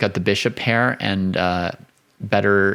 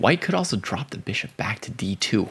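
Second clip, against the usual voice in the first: hushed, quieter whispering; 5 dB quieter than usual. Analyzing chess moves, whispering in case another person hears. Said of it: "I'm whispering in case Benjamin hears me".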